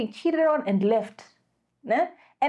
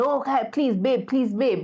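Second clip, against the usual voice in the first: mock-pleading, begging voice. Describing a mother begging the dad for attention, the speaker mimics her: imitating someone begging. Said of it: "beg for his attention".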